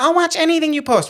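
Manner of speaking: very high, irritating, annoying mocking tone. Creator imitating what the audience will say, in an annoying mocking voice. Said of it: "why'd you like say that in an annoying voice?".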